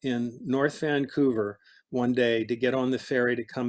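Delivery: plain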